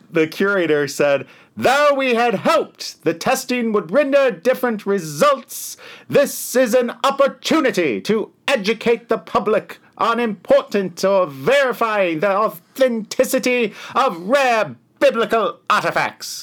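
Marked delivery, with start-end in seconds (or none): 1.6-16.5 put-on old-time 1920s newsreel announcer voice, very high. Pass on to the others what the curator said, in a 1920s news reporter voice. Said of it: "The fuck was that voice? You are not reporting the news in 1920".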